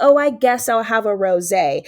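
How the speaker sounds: plain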